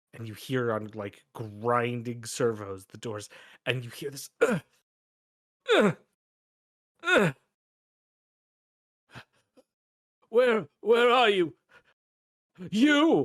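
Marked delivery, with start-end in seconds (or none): 4.4-13.3 very high, loud, pained groaning of wounded man. Voicing a crawling man with a missing foot: crawling wounded man groaning. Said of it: "a man comes crawling on".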